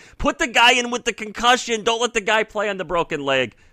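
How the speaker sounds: acted, very high, shrieked screaming. Retelling watching a game with money on a bet: retelling a scream. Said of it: "and I'm screaming".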